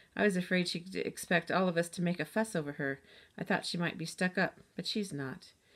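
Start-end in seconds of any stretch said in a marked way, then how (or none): none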